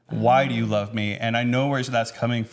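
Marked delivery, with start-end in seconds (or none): 0.1-1.1 put-on super sad voice. Retelling her question asked while looking in the eyes: imitating someone super sad. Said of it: "with being super sad".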